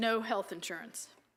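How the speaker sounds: plain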